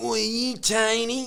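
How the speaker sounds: put-on street-dealer voice, very high and very slow. Retelling what a drug dealer said when the speaker's car broke down, imitating a drug dealer's voice. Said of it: "that kind of voice like this".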